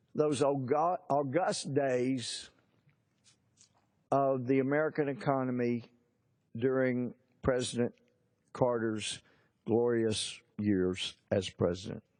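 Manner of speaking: dripping with sarcasm. Praising past economic years he clearly disliked: sarcastic. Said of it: "I say sarcastically".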